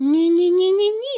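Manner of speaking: frightened tone. A cat objects to the plan to tear the threads, frightened objection. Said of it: "злякано заперечив кіт".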